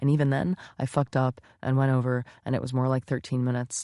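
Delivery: plain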